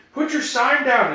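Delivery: high-pitched, shrill, loud yelling. Retelling how a friend yelled at a fan holding up a sign: imitating a friend yelling. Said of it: "you'd hear D".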